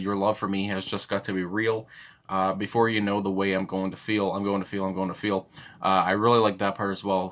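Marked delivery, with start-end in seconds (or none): none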